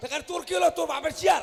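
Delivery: angry shouting.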